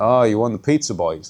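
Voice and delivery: imitated snide, jabbing tone. Retelling a rival's remark while walking past: imitating a snide remark. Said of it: "quite snidely".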